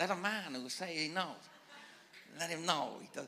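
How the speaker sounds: put-on Japanese accent with mystical tone.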